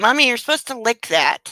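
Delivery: loud talking-dog character voice. Saying what the dog's look seems to say: voicing the dog. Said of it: "He always gives me this look like".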